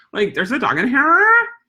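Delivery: put-on disgusted valley girl voice. Showing how to role-play with clients, disgusted valley girl voice. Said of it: "my uh, disgusted valley girl voice".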